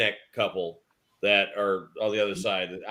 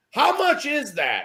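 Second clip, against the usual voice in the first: loud, very high-pitched, blurted yell. Retelling a husband asking a price in a store: imitating a loud question. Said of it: "loud in the store".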